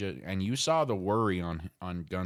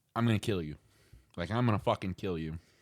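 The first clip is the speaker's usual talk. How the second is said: put-on politely delivered menacing tone. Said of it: "the nicest way to tell someone".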